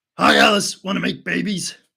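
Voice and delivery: menacing raspy villain voice. Greeting someone by name, doing a bad Freddy impression. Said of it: "That was a bad Freddy impression".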